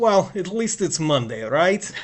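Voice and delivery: put-on, imitated Eastern European accent. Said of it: "so Eastern European accent".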